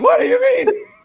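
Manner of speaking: play-acted very high, loud shrieking outburst. Joking about own breakups, imitating own screaming. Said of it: "I'm always the one screaming".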